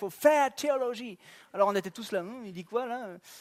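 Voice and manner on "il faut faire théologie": put-on French spoken with an anglophone English accent. Quoting a former professor who said it with an english accent. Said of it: "Puis il avait un accent anglais".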